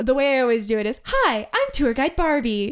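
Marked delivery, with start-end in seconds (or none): 1.0-2.7 slow, swooping, drawn-out sing-song presenter voice. Showing someone your presenter voice, introduce yourself as Tour Guide Barbie. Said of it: "my presenter voice".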